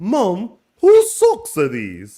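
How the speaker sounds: very high, very loud, slow, swooping delivery. Retelling a line said on the show: Paul Telfer impression. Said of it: "in my best Paul Telfer way".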